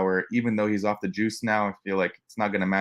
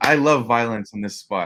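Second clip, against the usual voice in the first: ordinary talk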